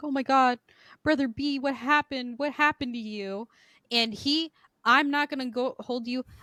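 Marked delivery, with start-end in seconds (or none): 0.0-3.5 high, tearful voice through sobs. Retelling a woman finding a hurt man: imitating someone crying. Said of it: "And she starts crying. She's like".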